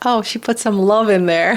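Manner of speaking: put-on child voice, bright little shout. Retelling what one of the kids says about the food: imitating a kid shouting. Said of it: "one of them shouts like".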